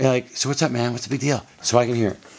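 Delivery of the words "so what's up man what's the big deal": loud projected stage whisper. Actor running a scene in rehearsal after being told to sit down, stage whisper. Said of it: "but it's stage whispers".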